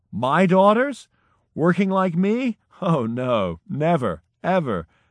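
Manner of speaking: high, slow, spoken through laughing out loud. An old midwife answers a student's question about her daughters, laughing out loud. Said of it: "threw her body forward and laughed out loud".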